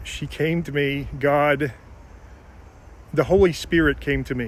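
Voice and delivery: a little tearful, teary-eyed, close to crying. Recounting how a doe came out of the woods and walked alongside them, teary-eyed. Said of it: "I'm getting a little teary-eyed".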